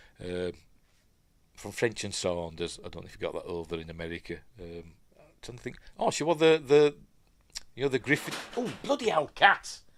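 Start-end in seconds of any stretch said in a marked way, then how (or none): 8.6-9.8 high, sudden, startled yelp. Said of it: "I shat myself then".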